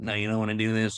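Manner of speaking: put-on voice of a throat voice box. Speaker describing how such a guy talks, imitating a throat-hole voice box. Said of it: "the guy who smokes has like the little hole in his throat".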